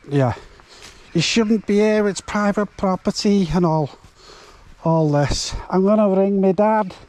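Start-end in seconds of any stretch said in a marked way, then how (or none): 1.1-6.8 put-on high, stroppy, poorly done Scouse accent. Retelling a woman telling the drone-flying speaker to leave, bad scouse accent. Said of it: "I can't do a Scouse accent anyway".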